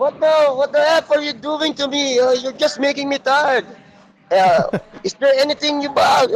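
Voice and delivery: very high-pitched shrill yelling. Retelling what a foreign client shouted at a coach: imitating a client shouting. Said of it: "He was shouting like".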